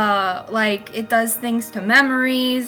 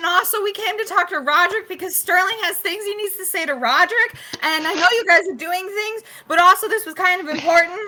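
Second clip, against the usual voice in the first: rapid, high, fast, full-throated yelling; 9 semitones higher than usual. Character explaining to the group why they came, shouting. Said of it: "I'm shouting".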